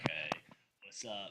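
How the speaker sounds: hushed, deep, raspy host voice, very quiet. Tell someone they sound like a talk show host and try it yourself, imitating a deep, raspy voice. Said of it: "You got that deep, like raspy voice".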